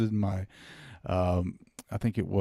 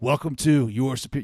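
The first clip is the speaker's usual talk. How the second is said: colorful, theatrical, dramatic host-style delivery; 4 semitones higher, 4 dB louder than usual. Showing how a podcast intro should sound: more dramatic podcast intro. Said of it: "you gotta be a little bit more dramatic".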